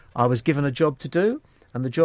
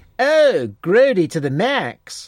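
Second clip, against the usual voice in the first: very slow, drawn-out, sort of American accent; 6 semitones higher, 6 dB louder than usual. Recalling how a slang phrase was said: sort of American accent. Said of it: "it was said like this. ... in a sort of American accent".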